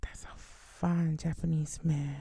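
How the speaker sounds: soft, slow, swooning whisper.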